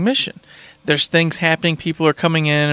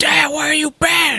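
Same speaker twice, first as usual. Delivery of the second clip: put-on crying boy voice, much higher; 11 semitones higher than usual. Retelling a game scene where the son finds his dad, imitating Atreus crying angrily. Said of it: "he's pissed. He's sad, he's crying".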